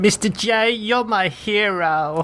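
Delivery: very slow, drawn-out, high cartoon sidekick voice. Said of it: "that was a good impression".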